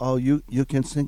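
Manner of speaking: ordinary delivery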